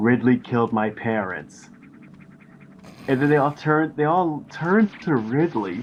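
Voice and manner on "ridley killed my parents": mock expressionless, dead flat monotone. Retelling a scene where Samus answers with the most deadpan look: deadpan delivery. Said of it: "with the most deadpan look in her eyes".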